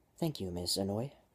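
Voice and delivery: ordinary delivery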